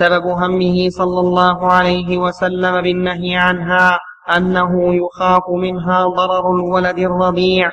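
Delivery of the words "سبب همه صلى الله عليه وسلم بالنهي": plain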